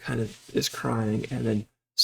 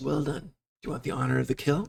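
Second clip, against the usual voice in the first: speaking in a whisper, quieter; 3 semitones higher, 6 dB quieter than usual. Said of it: "She's whispering".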